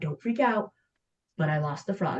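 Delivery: hushed, secretive, soft half-whisper under the breath. Retelling how a boy half-whispered to his sibling in the car: imitating a half-whisper. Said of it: "whispers to Sammy".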